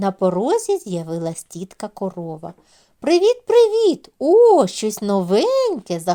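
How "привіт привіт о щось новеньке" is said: thrilled and delighted, high and loud. A cow appears on the doorstep and greets everyone: delighted exclamation. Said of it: "захоплено вигукнула вона".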